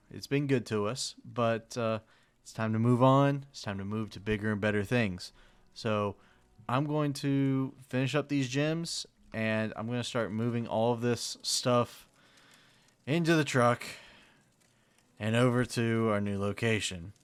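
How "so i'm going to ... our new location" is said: ordinary talk, nothing marked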